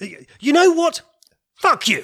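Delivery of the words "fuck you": sudden, intense, wrathful angry outburst. Answering a sin-detecting machine test, wrathful outburst. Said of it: "he's definitely got wrath down".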